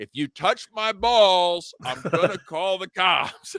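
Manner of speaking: play-acted escalating shout, high, slow and deliberate. Retelling repeating the same words to staff who mention a supervisor, retelling a shout, getting louder. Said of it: "I just started saying it louder and louder".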